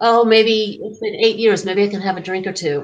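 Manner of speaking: ordinary delivery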